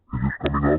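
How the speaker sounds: deep disguised man voice.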